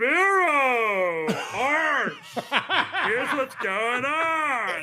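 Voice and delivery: very slow, high, booming sportscaster call, on stretched. Imitating a TV football throw to a studio check-in: Adam Shine impression. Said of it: "He does a better impression than I do".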